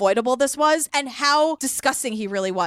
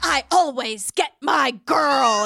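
odd, creepy put-on voice, drawn out. Retelling what bachelor number two said in the green room, in Jed's weird voice. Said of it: "doing this weird voice".

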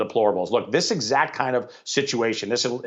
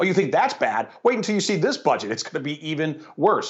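mocking, scornful, scoffing jeer with laughter; 4 semitones higher than usual. Imagining how he answers critics of his budget, retelling a scoffing taunt. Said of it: "it's almost as if he scoffed, he, he laughed at America".

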